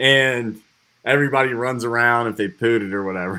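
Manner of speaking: normal talking voice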